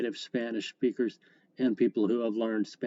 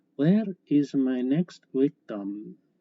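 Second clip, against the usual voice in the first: put-on loud, heavy Romanian accent, laid on thick; 2 semitones higher, 5 dB louder than usual. Speaker quotes her spanish teacher calling on a student, in a thick romanian accent. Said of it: "she would actually say in her thick Romanian accent".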